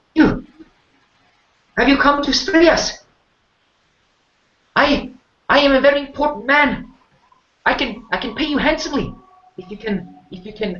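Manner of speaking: very high, near-shouting voice. Voicing a frightened man who pushes forward offering payment: loud, high-pitched voice. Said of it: "he's not speaking very quietly ... quite high voice".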